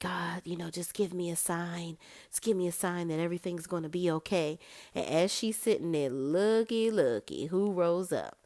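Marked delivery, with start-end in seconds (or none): 0.0-4.6 mock dismayed, pleading tone. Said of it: "she sits down in dismay".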